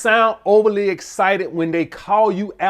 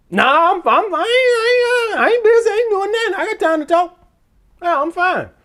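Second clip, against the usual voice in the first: very high, eager, overexcited voice. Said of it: "expect your voice to be high pitched".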